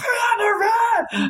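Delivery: very high, thrilled, excited shriek. Recounting running over to him when security held him at the door: retelling an excited scream. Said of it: "screamed and just ran over there and was like".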